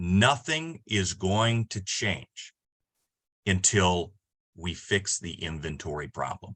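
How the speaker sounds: deliberate, very slow, final, word by word. Speaker announces a point to listeners, very slow and definitive. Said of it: "I'm going to say this really slowly and really definitively".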